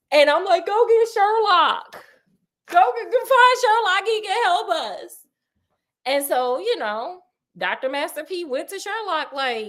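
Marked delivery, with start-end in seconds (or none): 0.6-5.1 high, tearful, pleading crying voice. Retelling a story, acting out a crying man begging for Sherlock: acting out crying. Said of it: "if I'm just sitting there crying".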